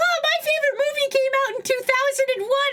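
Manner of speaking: acted-out mocking, needling, very high voice. Mimicking how Ryura said something, mocking imitation of Ryura's tone. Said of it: "the way you said that".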